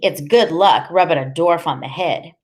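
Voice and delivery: ordinary delivery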